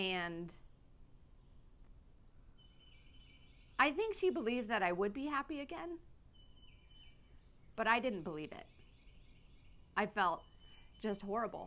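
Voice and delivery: tearful voice, talking through tears, crying. Speaking on Coffee with Cam about a hard time, crying. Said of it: "here I am crying on Coffee with Cam again".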